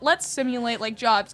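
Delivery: ordinary talk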